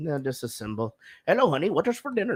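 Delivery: mock, put-on Indian-accented voice. Quoting something to friends, in a put-on Indian accent. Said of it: "why are we doing this in an Indian accent?".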